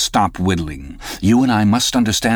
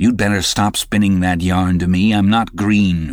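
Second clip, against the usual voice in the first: plain reading voice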